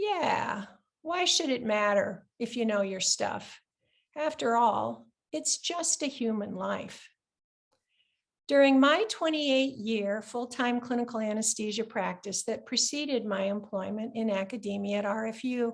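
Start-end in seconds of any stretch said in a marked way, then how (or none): 0.0-7.1 acted, heavily sarcastic, mocking tone. Quoting what he would say to residents who didn't know their surgical anatomy, mimicking a very sarcastic tone. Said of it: "he would say to them in a very sarcastic tone".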